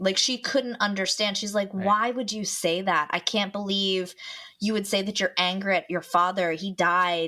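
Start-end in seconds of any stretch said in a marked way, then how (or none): 1.8-7.3 imitated, mock-angry tone. Retelling what a woman said to her sister, imitating an angry scolding. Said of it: "got angry at my sister".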